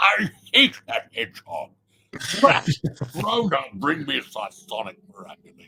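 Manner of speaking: swooping, animated cartoon voice, pitch swinging all over. Retelling how Doctor Robotnik was voiced in the show: Doctor Robotnik voice. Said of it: "his voice was like this".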